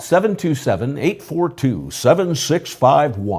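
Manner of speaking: on-air announcer-style voice. On the show, giving the Chamber of Commerce phone number in a broadcast voice. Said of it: "that was your broadcast voice".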